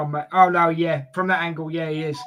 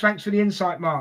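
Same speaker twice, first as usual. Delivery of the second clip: plain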